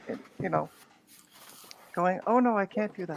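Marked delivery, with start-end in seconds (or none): 2.3-3.2 put-on voice, meek and mild. Retelling how Dave declined to swear on stream: imitating Dave meek and mild. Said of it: "meek, mild".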